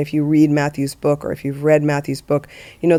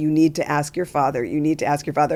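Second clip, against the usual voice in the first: crying with laughter, words squeezed out laughing; 3 dB quieter than usual. Retelling a moment in the car with a six-year-old, retelling laughing while talking. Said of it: "I'm just crying with laughter, trying to squeeze out the words".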